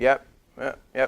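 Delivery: limp, flat, lifeless and bored delivery. Showing a listener just sitting there like a dead fish: lifeless dead-fish listener. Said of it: "if you're just like a dead fish and just sitting there like".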